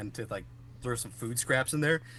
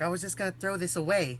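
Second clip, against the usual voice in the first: put-on New York accent, pitched higher; 6 semitones higher than usual. Describing a man's voice to co-hosts, quoting him in a New Yorker accent. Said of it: "like a New Yorker or something".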